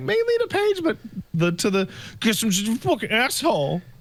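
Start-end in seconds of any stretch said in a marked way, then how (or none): 2.2-3.8 grumbling angrily. Retelling how someone stood up and left: imitating someone muttering angrily. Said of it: "he mutterly angry".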